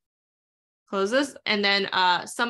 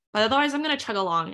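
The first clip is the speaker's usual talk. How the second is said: a little fast, rushed, chugging along. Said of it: "I know I'm speaking a little fast".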